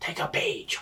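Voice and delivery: breathy, hushed whisper under the breath. Voicing a character who elbows a companion and whispers advice: whispering in character. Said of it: "basically whisper".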